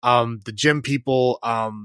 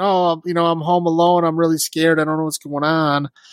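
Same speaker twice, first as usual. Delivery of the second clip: put-on crying, scared child voice, much higher pitched; 5 semitones higher, 3 dB louder than usual. Retelling a story where a demon kid cries at a pregnant lady's door, imitating a crying scared kid. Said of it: "goes to pregnant lady's door crying".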